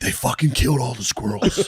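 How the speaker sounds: mimicked loud obnoxious voice. Retelling a loud spectator talking during putts: imitating a loud obnoxious guy. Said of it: "they were just being loud".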